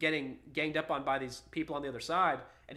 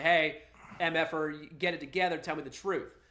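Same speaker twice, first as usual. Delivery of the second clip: usual speaking voice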